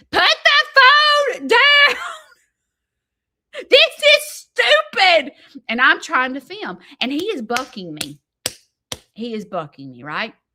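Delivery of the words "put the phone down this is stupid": piercing, very loud, very high drawn-out screaming. Retelling how he screamed while the speaker tried to film in the tractor: imitating someone screaming. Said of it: "he's screaming".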